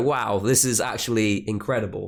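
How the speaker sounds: ordinary talk, nothing marked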